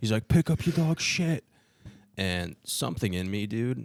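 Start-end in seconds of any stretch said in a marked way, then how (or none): 0.3-1.4 put-on old man scream, higher and louder. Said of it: "this old guy's screaming at me".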